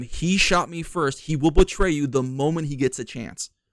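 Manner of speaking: ordinary talk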